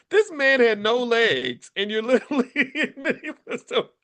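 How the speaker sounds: talking through laughter. Talking about a man with no legs who ran away: laughing while talking. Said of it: "I'm laughing at the absurdity".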